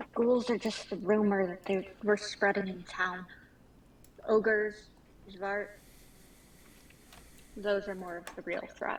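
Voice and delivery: discreet, confidential aside tone. Voicing a character telling a companion something quietly during a scene: speaking quietly. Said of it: "pitching her voice so it doesn't carry".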